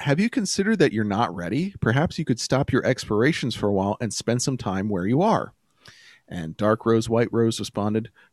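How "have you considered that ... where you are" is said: ordinary talk, nothing marked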